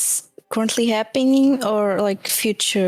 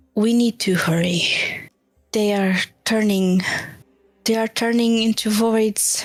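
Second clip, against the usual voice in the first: speaking very softly. Character lagging behind the group speaks to them; very soft. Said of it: "I say very softly to the group".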